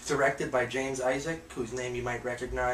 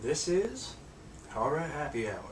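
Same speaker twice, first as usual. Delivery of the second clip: weird, big, showy announcer voice with swooping pitch; 3 semitones higher than usual. A host repeats the show's name during the intro, in an announcer voice. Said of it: "that announcer voice".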